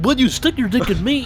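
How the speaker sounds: squeaky, very high, loud cartoon tiger voice. After announcing the impression, speaking in a Tigger voice. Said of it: "I'll do Tigger".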